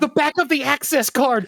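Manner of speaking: put-on screaming. Retelling yelling a game hint at a phone: retelling own screaming. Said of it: "I was screaming it".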